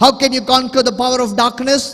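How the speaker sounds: high, loud preacher-style shout. Leading a crowd in call-and-response, shouting. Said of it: "I'm shouting".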